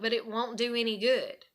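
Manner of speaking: ordinary talk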